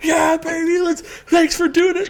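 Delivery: bursting with energy, very high and loud. Acting out how they'll sound after recording ends: imitating being full of energy. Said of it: "full of energy".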